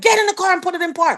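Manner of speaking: high, urgent screaming. Retelling an order screamed at the wife: imitating own scream. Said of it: "I screamed at his wife".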